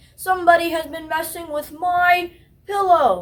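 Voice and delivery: booming, great big bear voice. Reading a story aloud, voicing the great big bear in a great big voice. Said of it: "in his great big voice".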